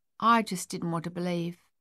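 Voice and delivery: ordinary talk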